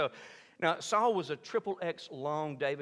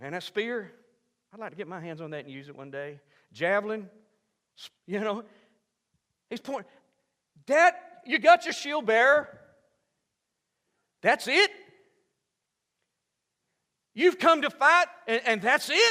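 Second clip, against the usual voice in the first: mock taunting, higher and louder; 8 semitones higher, 9 dB louder than usual. Retelling a boy taunting a giant: mock trash talking. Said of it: "He starts trash talking the giant".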